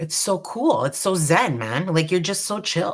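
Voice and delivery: chill, easygoing, laid-back surfer dude voice. Explaining dotting to newcomers, the speaker slips into a surfer dude voice. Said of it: "I just sounded like a surfer dude".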